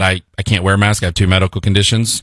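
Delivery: ordinary delivery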